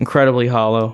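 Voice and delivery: plain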